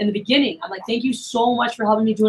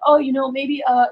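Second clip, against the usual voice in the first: mock nervous, hesitant stammering, higher; 3 semitones higher than usual. Retelling how a nervous seller sounded when afraid to ask: imitating hesitant stuttering. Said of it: "stuttering a little bit".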